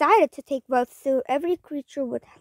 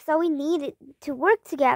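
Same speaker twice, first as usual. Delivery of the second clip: plain reading voice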